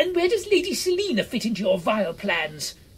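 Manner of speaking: very high-pitched, shrill, loud shout. Simon confronting Cunnilinger about Lady Selina, shouted. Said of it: "shouted Simon".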